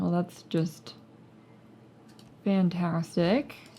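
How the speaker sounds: slow, drawn-out, heavy ironic sarcasm. Reacting to getting kicked out again: sarcastic. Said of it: "I'm being sarcastic there".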